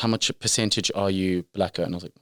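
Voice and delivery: ordinary talk, nothing marked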